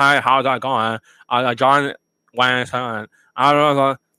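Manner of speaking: flat, slow, level, expressionless monotone drone. Describing people who talk without expression, the speaker imitates a flat monotone voice. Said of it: "They sound monotone like them".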